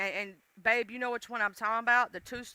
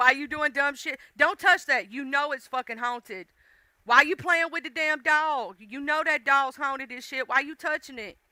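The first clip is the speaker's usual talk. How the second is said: put-on hollering, half-voiced; 3 semitones higher than usual. Retelling what gets yelled at characters on TV: imitating own hollering at the TV. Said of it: "sometimes I be hollering at the T V".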